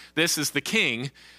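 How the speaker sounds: normal talking voice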